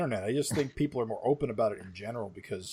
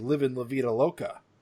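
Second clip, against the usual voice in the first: ordinary delivery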